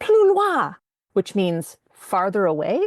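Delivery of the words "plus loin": shrill, very high screaming. Retelling yelling at a man who followed her to the platform: imitating someone yelling. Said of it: "I finally just yelled at him".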